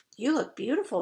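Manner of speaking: soft, hushed, under the breath. Narrator reading Prem's words to the narrator, in a hushed voice. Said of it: "says Prem in a hushed voice".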